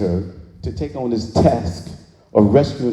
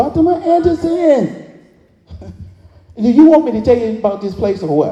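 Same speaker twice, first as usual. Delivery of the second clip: high, loud, tiny squeaky voice; 13 semitones higher, 6 dB louder than usual. Retelling a conversation with a woman who knocked, in a squeaky Fatima voice. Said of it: "this little squeaky voice".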